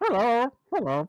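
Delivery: high, talking-bird parrot voice. In an acted scene, voicing the parrot character: parrot voice. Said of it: "I like parrot voice anyway".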